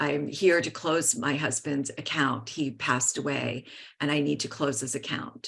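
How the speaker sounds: hushed, barely audible whisper. Retelling closing a late husband's bank account, imitating own whisper. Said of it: "I whispered".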